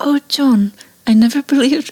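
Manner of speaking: terrible put-on English accent, high and slow. Retelling what Christina said before leaving, imitating Christina in English accent. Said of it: "That's like an English accent".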